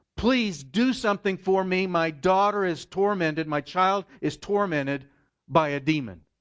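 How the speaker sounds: desperate, high, loud voice, almost screaming. Speaker retelling a mother's plea to Jesus for her daughter: acting out a near-screaming plea. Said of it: "she was all but screaming at him".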